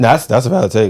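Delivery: voice breaks while speaking. Debating players' first seasons, voice cracking. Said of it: "Voice crack".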